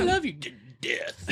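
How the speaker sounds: slow, nice-as-pie sweet voice. Retelling a movie villain's threat, imitating the Red Queen sweetly. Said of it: "I like how she was all nice".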